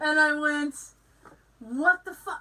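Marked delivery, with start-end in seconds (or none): 1.6-2.4 mad, exasperated angry outburst. Retelling a moment of seeing no money: retelling own angry outburst. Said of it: "I was so mad".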